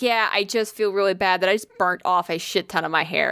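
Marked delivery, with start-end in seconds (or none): none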